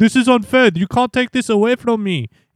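put-on very high-pitched, loud, strong French accent. Retelling what Ocon said on the radio after his penalty, Ocon in a very French accent. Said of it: "In a very French accent".

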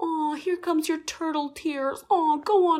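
mocking dismissive tone. Imitating Dorinda mocking someone's emotions: sarcastic Dorinda imitation. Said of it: "being really sarcastic as well about people's emotions".

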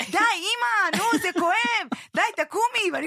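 acted yelling. A mother, shielding her son with her body, retells him shouting at her: retelling a shout. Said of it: "ואז הוא מתחיל לצעוק".

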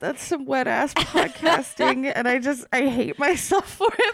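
high voice, talking through helpless laughter. Apologizing to the others for a joke, laughing while talking. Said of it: "I can't stop laughing".

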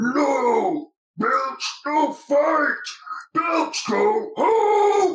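very high, very slow, drawn-out shouting. Voicing someone inside a rising cell commanding a creature: voice commanding Belch. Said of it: "we hear a voice from the inside that says".

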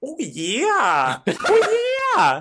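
very high, animated, swooping Minnesota accent. Asked by another speaker whether they can do a Fargo accent, speaker tries it. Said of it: "Can you do a Fargo accent?".

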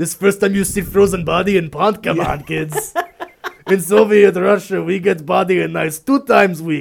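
very loud, high put-on Russian accent, broken English. Retelling a man's words to kids, imitating a Russian accent. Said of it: "He's Russian".

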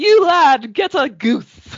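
gleeful character voice, high and slow.

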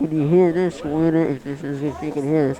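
muffled, smothered speech through a covered mouth. Speaker covers nose and mouth and asks a listener if it's audible, muffled. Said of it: "I'm muffling up, covering my nose and mouth".

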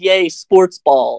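high, clueless, oblivious little cheer. Mocking the kind of guy who shows up to a Super Bowl party: mocking a Super Bowl party guest. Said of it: "one of those guys who shows up to the Super Bowl party and goes".

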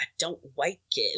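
muttered, mumbled under the breath. Retelling how he answered an interview question, muttered under his breath. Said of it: "Like under his breath".

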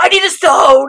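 unhinged, frantic, yelled shout. Recapping a scene where Father runs around, retelling a frantic yell. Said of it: "just starts running around randomly".

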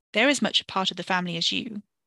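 plain reading voice

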